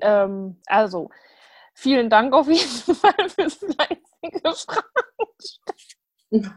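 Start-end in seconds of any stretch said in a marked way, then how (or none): 1.7-6.5 laughing through words, higher pitch. Thanking listeners for asking questions, laughing while talking. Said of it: "Warum lachst du jetzt so?".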